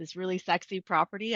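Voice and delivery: ordinary delivery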